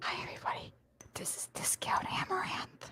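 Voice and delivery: asmr whisper. Prompted to do ASMR, the speaker greets everyone, ASMR whisper. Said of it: "A S M R".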